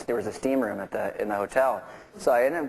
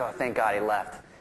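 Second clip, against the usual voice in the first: ordinary talk, nothing marked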